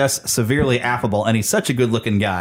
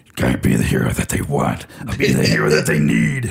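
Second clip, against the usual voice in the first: very low, harsh, raspy hero growl; 12 semitones lower than usual. Play a Batman mixed with a little bit of Muppet, in a purposely bad Batman voice. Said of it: "I'm purposely being a very bad Batman".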